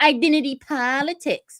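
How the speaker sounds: high scornful scoffing. Retelling how a commentator mocks critiques of identity politics: imitating Gerald Horne's voice. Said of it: "he'll go".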